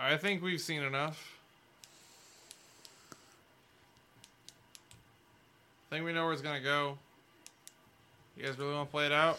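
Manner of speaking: big proclaiming voice, lightly done. Voicing an unseen speaker interrupting the fight: loud booming voice. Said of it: "a loud booming voice going".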